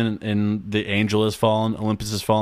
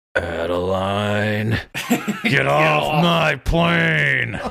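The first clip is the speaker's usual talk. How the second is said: plane dragged out and stretched; 4 semitones higher than usual. Naming a favorite fake president by quoting him: shitty Harrison Ford impression. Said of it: "my shitty Adeline impression".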